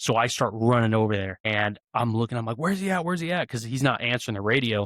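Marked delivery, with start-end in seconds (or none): 2.6-3.5 mock shouting, high and urgent. Retelling running to find a partner who stopped answering the radio: retelling own yell. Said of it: "'cause I'm yelling".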